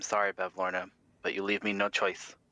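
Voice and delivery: low muttering under the breath. Voicing a character turning toward Bevlorna before a hex: muttering under breath. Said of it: "kinda mutter under his breath".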